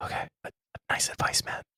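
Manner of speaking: speaking in a whisper. Thanking another speaker for advice during a podcast, whispering. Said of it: "Why are you whispering?".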